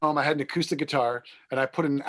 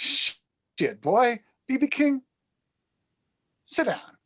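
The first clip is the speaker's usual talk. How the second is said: very slow, swooping high-pitched sing-song delivery; 9 semitones higher than usual. Retelling meeting a stranger drinking in his Cadillac: imitating the man in the Cadillac. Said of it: "And he looks at me and he goes".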